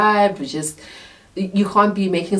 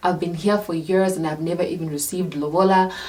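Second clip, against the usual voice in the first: plain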